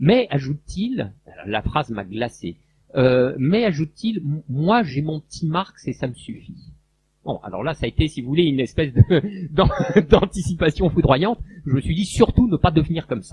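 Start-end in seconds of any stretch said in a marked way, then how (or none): none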